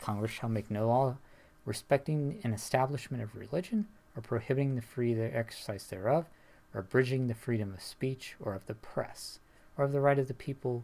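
ordinary delivery

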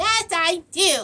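high, little doll voice. Playing with dolls, answer for the doll in a dolly voice. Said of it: "I have the worst dolly voice in the world".

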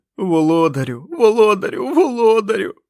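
very high, bubbling, muffled gurgling cry. Narrator reading a character's line from a story, in a muffled gurgling voice. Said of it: "приглушеним булькотливим голосом".

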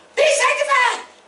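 high, loud screaming holler.

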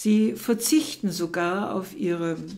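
ordinary delivery, nothing marked

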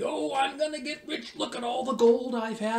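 proud, bragging tone. Speaker retells gold miners boasting about their ore, imitating proud speech. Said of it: "And they said proudly".

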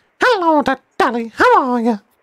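put-on sweet, cutesy voice. Speaker demonstrates a recent thing they just looked up, in a cute voice. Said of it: "Cute voice, like".

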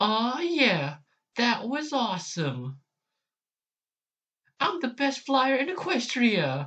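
very high, sing-song pony voice, swinging wide. Trying out cartoon character voices one by one, Rainbow Dash voice. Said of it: "Rainbow Dash now".

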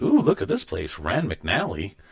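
plain

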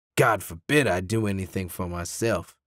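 low, dismissive, brushing-off tone. A father answers his wife during an argument over a car, dismissive. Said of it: "his father said dismissively".

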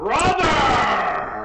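bellowing full-volume shout, high and swooping. A player's character calls up to a dragon in Draconic, shouting as loud as possible. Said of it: "I shout as loud as I can".

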